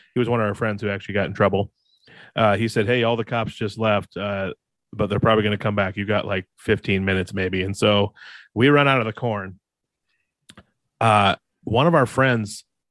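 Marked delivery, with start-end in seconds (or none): none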